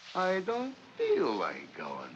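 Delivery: slow, sing-song, teasing, taunting mockery. Hurrying someone out the door, echoing their excuse back at them, mocking.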